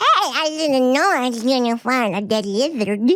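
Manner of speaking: tiny cartoon toddler baby voice. Recounting an animated scene, quoting the littlest baby in a baby voice. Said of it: "the littlest baby's like".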